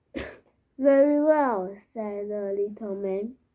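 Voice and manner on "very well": plain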